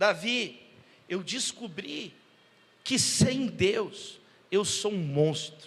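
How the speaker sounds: put-on weeping, tearful voice, very slow delivery. Retelling what a crying man said: imitating a man crying. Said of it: "E esse homem chorando".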